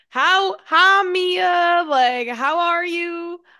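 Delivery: cheesy, fake Southern accent. Showing how she planned to talk all day, in a bad Southern accent. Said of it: "that's kind of a shitty Southern accent".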